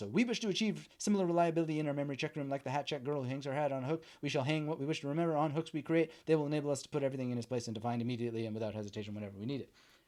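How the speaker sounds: very fast, rattled-off speed-reading aloud. Demonstrating a speed-reading exercise for the mouth muscles, reading really fast. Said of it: "read really fast".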